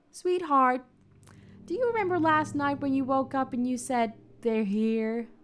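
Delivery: put-on American accent. In an acted scene, asking Sweetheart about last night: put-on American accent. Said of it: "actually probably not that bad American accents".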